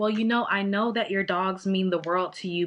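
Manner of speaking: ordinary delivery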